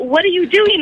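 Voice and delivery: put-on startled, panicky, high, freaked-out cry. Caller recalling a prank where he honked the horn: retelling freaking out. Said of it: "I'm, like, freaking out".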